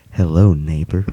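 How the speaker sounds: eerie put-on friendly voice. Retelling a cartoon scene of a neighbor at a window: creepy Mister Rogers voice. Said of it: "It's so creepy".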